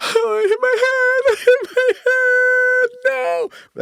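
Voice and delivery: very high, very loud, very slow drawn-out wail. Retelling his reaction after hitting his head and seeing blood; acting out own past panic. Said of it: "Like just freaking out".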